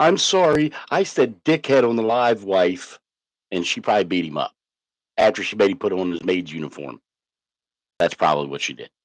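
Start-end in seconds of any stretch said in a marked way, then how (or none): 0.0-3.0 high, slow, drawn-out and apologetic. Imitating another wrestler apologizing to his wife: imitating him apologizing. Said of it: "and he went".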